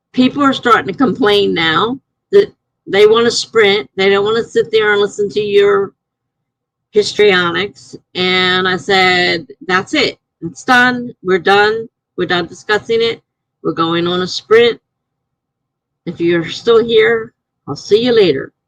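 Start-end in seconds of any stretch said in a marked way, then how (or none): none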